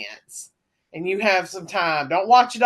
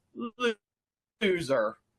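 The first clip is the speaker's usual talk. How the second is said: put-on PA announcer voice; 7 dB quieter than usual. Retelling what the PA said during the show, in the WCW voice. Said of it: "in the W C W voice".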